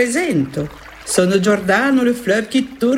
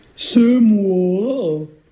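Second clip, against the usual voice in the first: big, booming voice of an ogress; 2 semitones lower than usual. Reading a tale, the ogress answers from grandmother's door: big ogress voice. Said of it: "dit l'ogresse de sa grosse voix".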